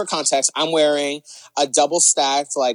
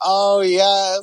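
faked, put-on moan of pleasure; 5 semitones higher than usual. Retelling how her friend faked it, imitating a faked moan. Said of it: "she's just like faking it".

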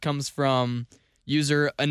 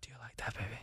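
fake quiet whisper, lower and quieter; 4 semitones lower, 20 dB quieter than usual. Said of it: "Whispering sex. You're trying to stay quiet".

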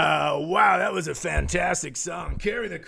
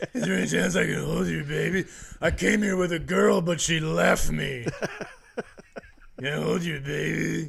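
mock completely hoarse voice. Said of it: "You're just completely hoarse".

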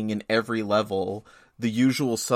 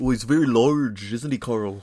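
put-on Upper Midlands accent, A sounding like O. Asking the other speaker why they keep talking that way, mimic them in a put-on Upper Midlands accent. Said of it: "with that like Upper Midlands accent".

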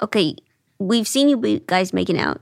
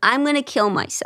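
put-on scream, pitched higher; 3 semitones higher than usual. Retelling how a woman in the audience reacted: imitating someone screaming. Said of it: "she starts screaming".

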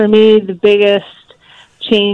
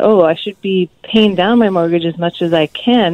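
normal talking voice

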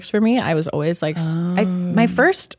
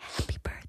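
soft, hushed whisper. Retelling watching a birth and greeting the newborn: imitating her own whisper. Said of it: "whispering to the baby".

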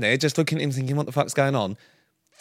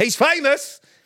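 mock shouting in a very high-pitched voice; 11 semitones higher than usual. Retelling how Sam announced a celebrity to passing shoppers: imitating Sam shouting. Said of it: "Literally shouting as we walk through".

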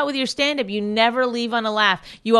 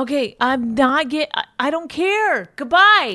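fed-up, exasperated, frustrated, stumbling; 2 semitones higher than usual. Leaving the recording while frustrated with another speaker: yelling in frustration. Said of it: "I'm sorry I'm yelling".

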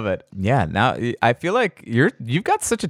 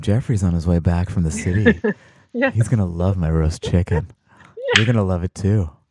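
very gentle, mild tone, low voice; 5 semitones lower than usual. Mimicking a woman whose recipes they cook, in a very gentle voice. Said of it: "a very Gentle voice".

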